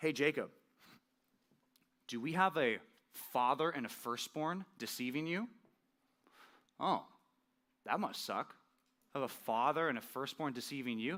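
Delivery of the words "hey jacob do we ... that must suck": heavy, obvious sarcasm with fake-sympathetic tone. Speaker explaining a verse, addressing jacob from the story, sarcastic. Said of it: "I'm going to say this sarcastically".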